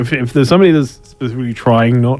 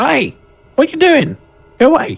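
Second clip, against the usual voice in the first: goblin character voice. Voicing a goblin leaning over a wall at the party: goblin voice. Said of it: "one of the goblins over the top leans over".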